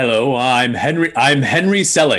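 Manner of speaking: very slow, deliberate, every word drawn out. Offering a joke impression after the other speaker asks to hear it: Henry Selick impression. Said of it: "a perfect Henry Selick impression".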